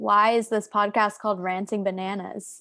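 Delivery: strong, heavy American accent. A podcast guest asks about the podcast's name in a very american accent. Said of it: "Which I just said in a very American accent".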